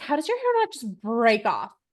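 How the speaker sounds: plain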